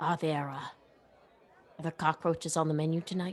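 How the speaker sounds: quiet, muttered under the breath. A character asks about tonight's menu, muttered under her breath. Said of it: "Under her breath".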